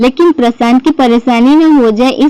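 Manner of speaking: ordinary delivery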